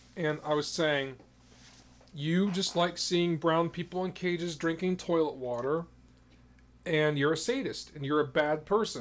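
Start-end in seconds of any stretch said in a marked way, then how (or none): none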